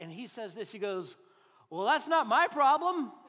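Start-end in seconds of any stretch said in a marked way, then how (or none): 1.7-3.1 put-on brash, bold, cocky toddler voice full of gusto. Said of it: "so much bravado and gusto".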